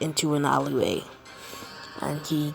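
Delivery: ordinary delivery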